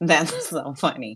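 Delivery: talking through laughter. Answering a question she never thought of, laughing while talking. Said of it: "I'm sorry that I'm laughing".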